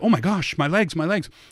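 acted-out panicking, frantic, beside-yourself outburst. Retelling legs being pulled apart on skis, acting out freaking out. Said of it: "I'm freaking out like".

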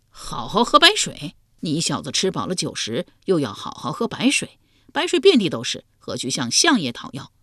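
plain

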